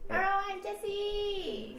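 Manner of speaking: exaggerated, put-on girl voice.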